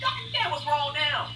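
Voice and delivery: high-pitched, mock annoyed, exasperated voice.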